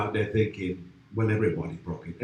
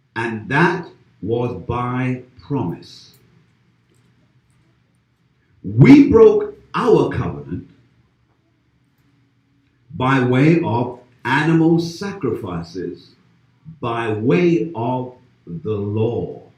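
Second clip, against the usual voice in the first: slow, deliberate, raised, spelled-out dictation pace; 5 dB louder than usual. Speaker telling listeners to write it down and remember it, speaking slowly. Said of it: "I'm going to say this slowly".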